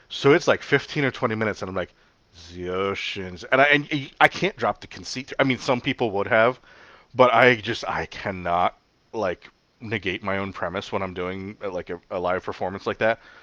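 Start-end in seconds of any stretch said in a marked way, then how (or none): 2.5-3.4 put-on French accent. Re-enacting your live performance of a long story, read in the Jacques Cousteau accent. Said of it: "reading this story in the Jacques Cousteau accent".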